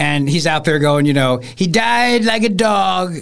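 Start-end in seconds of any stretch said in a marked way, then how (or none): 1.4-3.1 very slow presidential voice, every word dragged out. Retelling a comedian's bit about Soleimani being killed: Trump impression. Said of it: "great impression of Trump that he does".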